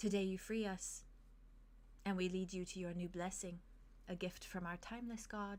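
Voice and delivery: very soft, gentle, hushed, garbled murmur. A voice garbles through the characters' minds, very soft. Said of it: "it says very softly".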